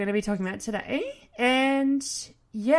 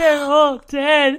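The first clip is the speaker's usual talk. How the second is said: mock crying, higher and louder; 4 semitones higher, 9 dB louder than usual. Retelling a movie scene where a teenage girl cries: imitating someone crying. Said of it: "And she's crying".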